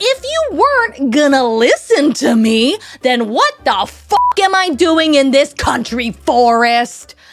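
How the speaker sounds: raging, furious, loud screaming outburst. Retelling how a mother screamed at her son: imitating a scream. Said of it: "she screams".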